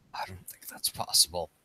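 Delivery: low, muttered, mumbled whisper. Voicing a character answering another character at a party: mumbled whisper. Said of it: "in kind of, like, a mumbled whisper".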